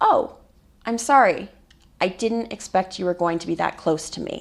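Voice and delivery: plain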